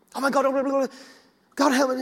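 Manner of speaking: frantic, high, rushed, tumbling panicked babble. Retelling own prayer as someone convulsed on the floor: imitating own past panic. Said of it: "I would just be panicking".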